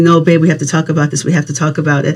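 ordinary delivery

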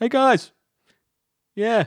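put-on yell. Retelling yelling up a garbage chute: imitating a yell. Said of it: "have to yell up the garbage chute".

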